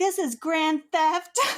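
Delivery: fake hardcore shouting. Retelling a story, the speaker voices the lady walking with the security guards: imitating a woman yelling. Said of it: "she was like yelling at him".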